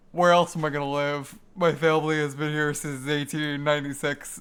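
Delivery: low-pitched voice projected loudly. Reading a character's line in a Critical voice: Critical voice. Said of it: "let me try and do my critical voice".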